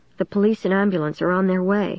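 ordinary delivery

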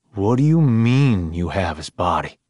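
plain

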